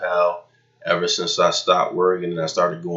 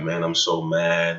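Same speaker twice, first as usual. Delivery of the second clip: mock-distraught, upset voice. Retelling a drive with a man whose car was booted, the speaker imitates a distraught man. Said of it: "He was distraught".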